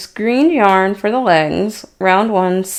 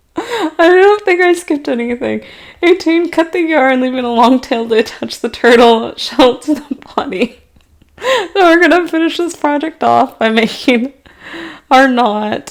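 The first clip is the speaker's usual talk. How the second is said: giggly, laughing speech throughout; 5 semitones higher, 4 dB louder than usual. Speaker finishing a crocheted turtle early in the morning, giggling while talking. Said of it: "Sorry, I'll stop giggling".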